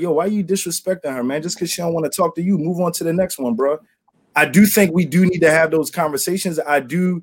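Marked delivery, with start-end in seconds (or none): none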